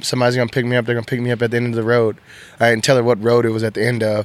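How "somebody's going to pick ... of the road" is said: fast, rushed, hurried reassuring tone. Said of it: "I was like".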